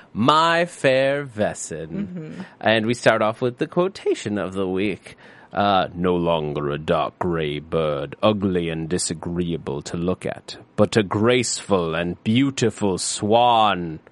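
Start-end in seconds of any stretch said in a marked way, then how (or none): 5.5-13.9 deadly grim, very low voice. Podcast host reads the quotation of the week aloud, in a grim voice.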